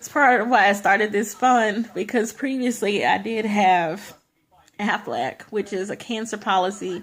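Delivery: voice choking up mid-sentence. Explaining why they started the fund, getting choked up. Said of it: "I'm getting choked up".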